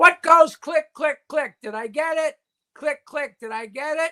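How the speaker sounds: put-on lifted into an old lady's voice.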